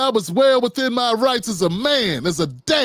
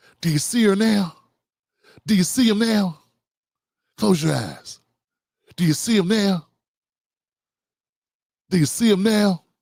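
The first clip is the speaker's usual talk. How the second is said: slow, deliberate, drawn-out dramatic lawyer voice; 2 semitones lower than usual. Imagining a lawyer doing his best impersonation: Matthew McConaughey impression. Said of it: "he would do his best impersonation".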